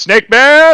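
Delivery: very loud, high, shrill yelling. Stuck with hands in a tree, calling out for snake man, yelling. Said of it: "That's why I'm like yelling".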